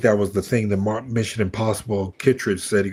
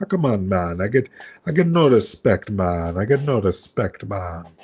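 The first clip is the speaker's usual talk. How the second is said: put-on Jamaican accent in a man's voice. Showing how he does his Penguin Man bit, in a Jamaican accent. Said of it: "I do it like a Jamaican man".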